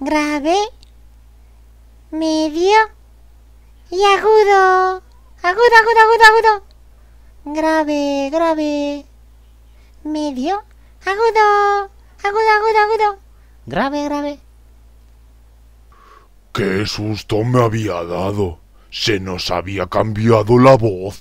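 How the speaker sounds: high-voiced bird.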